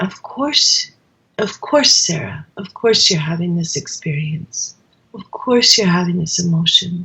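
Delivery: resonant, empathetic voice. Showing how to answer oneself about an emotion: resonating tone. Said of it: "just in the tone of your voice".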